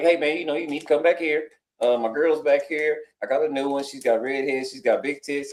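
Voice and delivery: put-on offhand voice. Retelling what Jeff said when he walked up, Jeff's mock-nonchalant delivery. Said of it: "He said it real nonchalant too".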